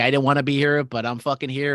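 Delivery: normal talking voice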